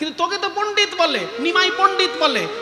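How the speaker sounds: scolding, rebuking tone.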